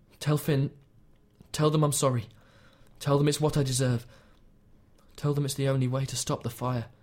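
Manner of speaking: ordinary delivery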